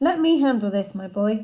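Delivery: ordinary delivery, nothing marked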